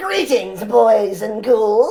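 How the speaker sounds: very loud, high, slow, drawn-out booming voice. Giving a sample of the manic version of the puppet character: Crypt Keeper voice. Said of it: "Give me a little sample".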